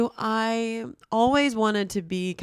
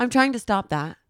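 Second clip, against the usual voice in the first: slipped-in British accent; 3 semitones higher, 3 dB louder than usual. Speaker, nervous while confiding to a co-host, slips into a british accent. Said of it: "That sounded British".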